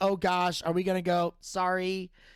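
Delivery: ordinary delivery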